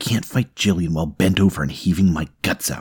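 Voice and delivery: ordinary talk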